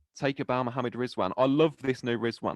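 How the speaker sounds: ordinary talk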